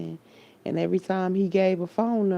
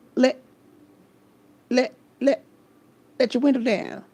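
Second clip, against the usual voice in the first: high-pitched stammer, stuck repeating "let"; 6 semitones higher, 3 dB louder than usual. Retelling a movie scene, imitating a stuttering friend. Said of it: "the stuttering friend".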